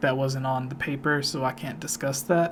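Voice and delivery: ordinary talk, nothing marked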